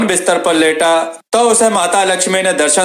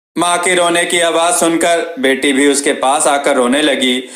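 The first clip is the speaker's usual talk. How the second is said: plain reading voice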